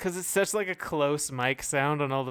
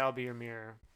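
plain

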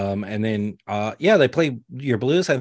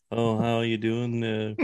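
put-on, quieter muttering under the breath; 5 dB quieter than usual. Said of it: "talking under his breath".

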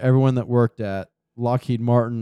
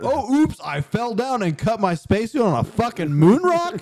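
high, breezy, mock-nonchalant astronaut voice. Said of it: "bounce around all nonchalant like".

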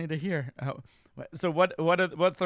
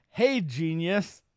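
cocky, brash, swaggering. Starting off a riddle told to another speaker, cocky. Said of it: "It starts off cocky".

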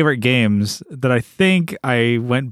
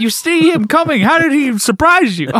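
very high, acted-out scolding yell; 4 dB louder than usual. Acting out yelling at the listener for getting hit, retelling a yell. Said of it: "I'm like yelling at you".

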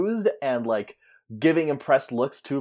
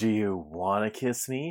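put-on sultry voice, lower and quieter; 4 semitones lower, 7 dB quieter than usual. Retelling how Finn leans down to Quinn: imitating Finn acting sultry. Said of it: "he's being all sultry and he's like".

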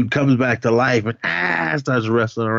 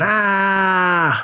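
high-pitched screaming. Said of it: "She starts screaming".

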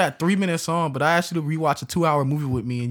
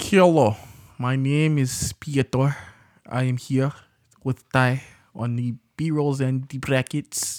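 put-on Russian accent. A co-host introduces himself to the listeners in a fake Russian accent. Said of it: "that Russian accent you tried to pass off there".

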